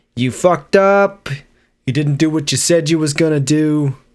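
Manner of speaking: put-on spoken in a Bronx accent. Acting out Judas coming back to accuse someone, Harvey Keitel impression, Bronx accent. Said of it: "That's my best Bronx accent".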